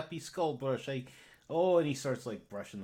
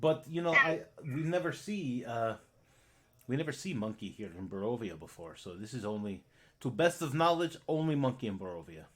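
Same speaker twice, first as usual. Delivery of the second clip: put-on Russian accent. Playing a character in a role-play, speaking with a russian accent. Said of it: "nuts with a Russian accent".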